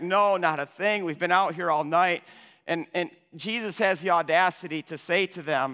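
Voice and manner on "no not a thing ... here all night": usual speaking voice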